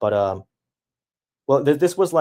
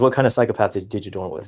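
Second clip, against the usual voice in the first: ordinary delivery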